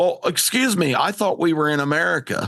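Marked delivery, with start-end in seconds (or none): none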